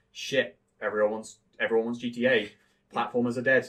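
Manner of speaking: ordinary delivery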